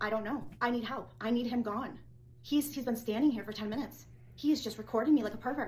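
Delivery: plain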